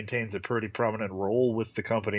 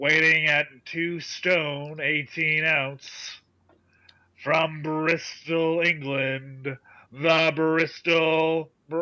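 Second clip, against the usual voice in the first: put-on wrestling ring announcer voice, higher and louder; 7 semitones higher, 4 dB louder than usual. Introducing a friend as if announcing a wrestler: Gary Michael Cappetta announcer impression. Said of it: "announce it like I was Gary Michael Capetta".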